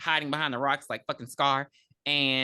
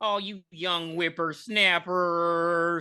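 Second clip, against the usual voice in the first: scolding tone, higher pitched; 3 semitones higher than usual. Retelling a scene where the sheriff scolds: imitating the sheriff scolding. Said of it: "talking about".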